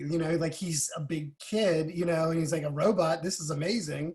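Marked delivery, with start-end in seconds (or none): none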